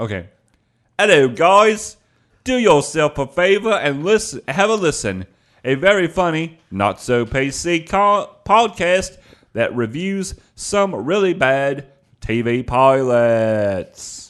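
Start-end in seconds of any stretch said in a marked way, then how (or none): 1.0-14.3 put-on high, loud, slow, drawn-out Australian accent. Co-host records a plug for the podcast for listeners, Robin Leach impression. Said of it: "should I say it in an Australian accent?".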